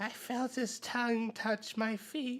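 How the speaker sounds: goblin voice, high, slow, drawn-out stage whisper. Voicing a goblin telling a friend what happened: goblin half-whispering.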